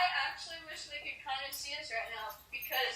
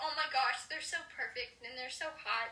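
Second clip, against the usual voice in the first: normal talking voice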